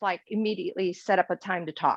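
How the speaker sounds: ordinary talk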